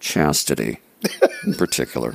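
very hushed, low, said under the breath. Answering a question, the speaker adds a detail: said very low. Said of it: "you said that so low".

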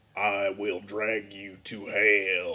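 low, very slow spooky growl.

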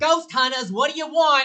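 very loud, very high, shrill, disgruntled shout. Voicing a disgruntled secretary ghost popping out of a device: yelling disgruntled secretary ghost. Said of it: "pops out yelling".

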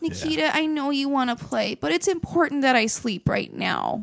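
put-on exceedingly well-mannered little child voice. Retelling a kid answering being poked awake: imitating Percy, super polite. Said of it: "just super polite".

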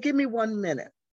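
put-on high-pitched Southern woman's accent. Retelling what a residence manager said: imitating a southern voice. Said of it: "in her Southern voice".

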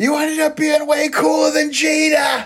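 put-on Boston accent, very high, one word stretched out. Retelling what was yelled at someone yesterday while drunk, in a fake Boston accent. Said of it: "I was using my fake Boston accent".

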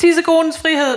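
mock shrill, very high, loud child's yell. A parent quotes their daughter at bedtime, retelling a child shouting. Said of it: "og så råber".

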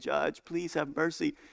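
begging, pleading, tearful, crying. Retelling a court case, the speaker voices the girl pleading with the judge, imitating crying while pleading. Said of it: "And she's crying and she's saying".

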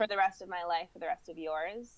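normal talking voice

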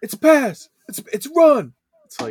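slow, very loud, very high booming yell. Showing how he yells at the defense, imitating someone yelling. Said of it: "he's yelling at the defense".

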